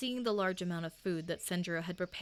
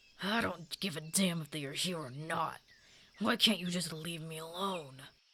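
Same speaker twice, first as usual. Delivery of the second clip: rough-edged, gravelly delivery. Reading a story aloud, a voice from the hall answers in a rough, gravelly voice. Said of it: "a rough, gravelly voice".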